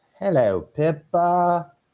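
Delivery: high cartoon pig voice. Greeting the team and listeners at the start, says hello in a Peppa Pig voice. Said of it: "That's my Peppa Pig voice".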